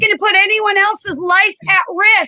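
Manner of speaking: high-pitched, loud shouting. Someone refusing to answer an interviewer's question, shouting. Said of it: "Do you feel there's a reason to shout your answers?".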